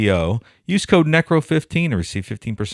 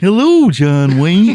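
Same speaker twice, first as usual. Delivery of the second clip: put-on cheerful dinosaur voice, as for kids; 8 semitones higher, 8 dB louder than usual. Greeting the clown, the speaker says hello in a Barney voice. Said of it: "you like my Barney voice?".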